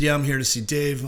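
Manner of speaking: plain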